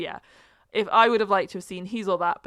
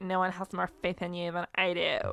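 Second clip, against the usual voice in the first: put-on deadpan robotic voice, quieter; 6 dB quieter than usual. Imitating a movie character on a spin bike: deadpan robotic Kourtney Kardashian. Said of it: "totally deadpan, soulless, robotic Kourtney Kardashian".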